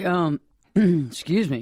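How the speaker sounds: slow, choked-up voice, words forced out. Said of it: "I got all choked up".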